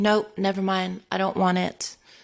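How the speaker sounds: put-on angry, pissed-off voice. Retelling a bartender story, quoting the customer's refusal: imitating a pissed-off customer. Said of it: "she got all pissed off".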